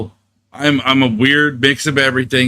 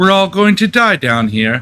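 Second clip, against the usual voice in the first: put-on creepy little-girl voice, British accent, pitched up; 6 semitones higher than usual. Giving the girls a line to say in their best British accent; British little girl accent. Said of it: "in your best best British accent. Say".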